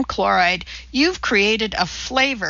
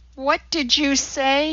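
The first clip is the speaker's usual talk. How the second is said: hissed out; 4 semitones higher than usual. A man bats away the sponge of the woman tending him, hissing. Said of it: "he hissed".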